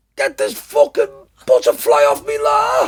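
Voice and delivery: very high, shrill, swooping, frantic panicked scream. Telling how a man reacted to a moth on his shoulder, imitating Brian screaming. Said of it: "he started screaming".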